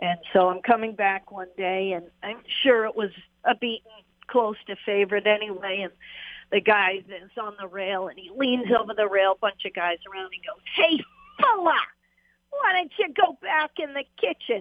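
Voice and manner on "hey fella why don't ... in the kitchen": put-on Boston accent, high-pitched and swooping. Retelling what a man leaning over the rail called out to him, in a Boston accent. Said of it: "I got that Boston accent down pretty good".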